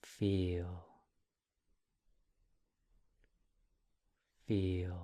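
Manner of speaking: calm, easy, gentle, relaxed, drawn-out meditative tone. Meditation guide showing listeners how a label should sound, gentle, relaxed tone. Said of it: "it will sound like this".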